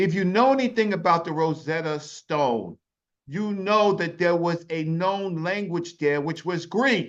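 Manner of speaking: loud, insistent shouting. Arguing over the Rosetta Stone after being contradicted: shouting. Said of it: "don't shout at me".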